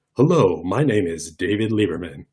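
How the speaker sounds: smooth, slow AM radio host voice. Speaker demonstrating a smoothed-out speaking voice, smooth AM radio host voice. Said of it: "that sort of A M radio host".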